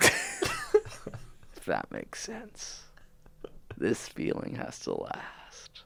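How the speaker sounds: very slow, dragged-out, hushed, barely audible near-whisper. Podcast co-host, choked up and not wanting the episode to end, talking very slowly. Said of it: "You're talking so slow".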